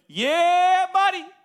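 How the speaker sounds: very loud, high, shrill hyped yell, yeah drawn out. Telling listeners how Ronnie Coleman got hyped up, Ronnie Coleman hyped-up shout. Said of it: "every time this guy would get hyped up".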